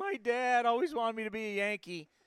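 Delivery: put-on tearful, high crying voice. Retelling the player holding up a Yankee jersey: imitating Jason Giambi crying. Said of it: "and he's crying again".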